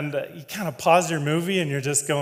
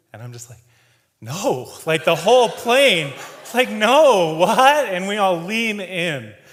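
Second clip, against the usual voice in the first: plain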